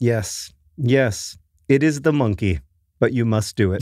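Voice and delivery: put-on heavy Polish accent, laid on thick. Retelling what a woman told the speaker, in a thick polish accent. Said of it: "in a very thick Polish accent".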